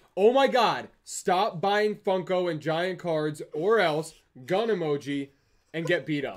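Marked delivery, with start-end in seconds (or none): 0.2-5.3 slow, deliberate reading aloud. Reading out an all-caps donation message: a little louder. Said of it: "so I'll say it a little louder".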